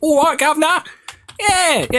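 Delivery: squeaky, very high put-on youth voice. Mocking how young viewers talk: imitating Rob Beckett. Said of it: "you're all Rob Beckett".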